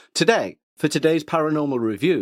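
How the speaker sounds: television broadcast presenter voice. Opening a paranormal movie review, the host redoes the intro in a BBC presenter voice. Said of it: "That's more B B C".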